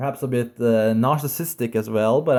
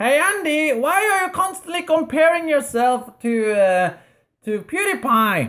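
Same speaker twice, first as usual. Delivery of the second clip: silly, stupid, very high put-on voice; 14 semitones higher than usual. Voicing an imagined viewer asking the speaker a question, in a stupid voice. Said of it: "in a stupid voice".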